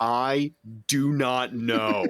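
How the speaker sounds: play-acted irritated, very slow, dragged-out delivery. Describing a scene where the girls ask her a bunch of questions, imitating annoyed tone. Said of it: "you could hear the annoyance in her voice".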